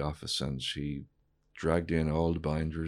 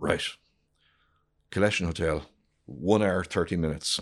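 put-on gruff man's voice, louder; 4 dB louder than usual. Retelling Dennis's words to the speaker, imitating gruff Dennis. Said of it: "Dennis could be very gruff".

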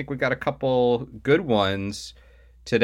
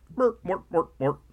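put-on puppet gibberish voice, much higher pitched; 8 semitones higher than usual. Showing the other speaker which Muppets chef you mean, in a Swedish Chef voice. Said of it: "Or the Swedish chef".

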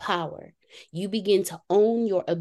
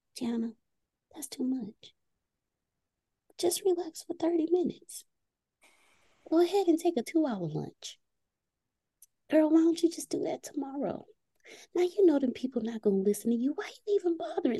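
tiny, small, high, soft voice; 8 semitones higher, 5 dB quieter than usual. Voicing the self-sabotaging voice that talks in her ear, in a little small voice. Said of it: "she'll start off with a little small voice".

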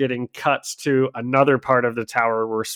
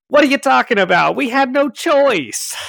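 put-on loud, very high-pitched old-time gangster voice; 13 semitones higher, 6 dB louder than usual. While discussing Mr. Big's men, a speaker tries an impression: 1930s mafia impression. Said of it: "30s mafia impression".

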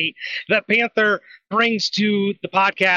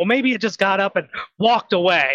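usual speaking voice

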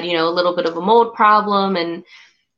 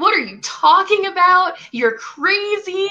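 put-on tearful, very high-pitched crying outburst; 12 semitones higher than usual. Retelling the speaker's own reply while upset: imitating own crying. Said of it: "And I'm crying and I'm like".

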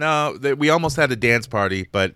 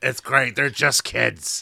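put-on drunk, breathy voice. Retelling the auntie talking to another table: imitating drunk breathy voice. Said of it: "all drunk, breathy voice".

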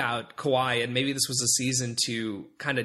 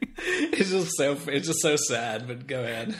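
words broken up by laughter, swooping. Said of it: "why are you laughing?".

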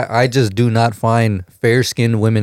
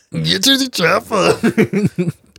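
put-on very slow, drawn-out Austrian accent, action-hero voice; 8 semitones higher than usual. Joking about Austrian women talking like Arnold Schwarzenegger: Arnold Schwarzenegger voice. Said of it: "imagine the ladies, like, talking like that".

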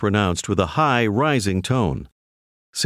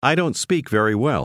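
normal talking voice

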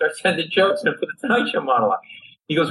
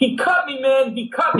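mock pained scream, high and drawn-out; 9 semitones higher than usual. Quoting a bar patron who was cut on the neck: retelling a scream. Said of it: "he starts screaming".

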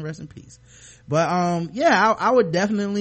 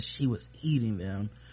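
hushed, very soft, secretive whisper under the breath; 9 semitones lower, 9 dB quieter than usual. Retelling a character's confession, said again: imitating a whisper. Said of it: "and he whispers again".

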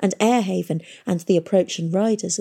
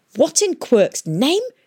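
gasped out in shock, high pitch; 5 semitones higher, 4 dB louder than usual. Seeing the red guild mark run down her face, the engineer speaks, gasping. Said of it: "The engineer gasped".

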